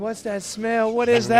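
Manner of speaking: put-on shrieking, high alarmed panicked scream. Retelling how a wife woke up to a skunk smell: imitating someone screaming. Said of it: "she's screaming".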